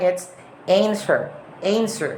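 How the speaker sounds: "answer" said with American pronunciation. Comparing British and American pronunciation of a word, now in an American accent. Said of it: "and in American".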